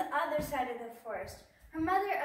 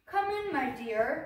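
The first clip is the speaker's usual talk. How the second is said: slow, gruff storybook wolf voice; 4 dB louder than usual. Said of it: "The wolf said in a gruff voice".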